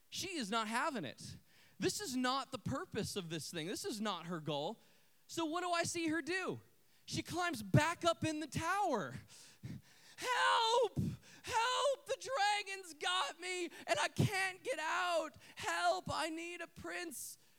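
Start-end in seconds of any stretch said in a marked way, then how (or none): 10.1-17.3 put-on high, drawn-out damsel-in-distress cry. Retelling how a little girl cried from a play tower: imitating a girl yelling for help. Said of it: "I hear that voice again".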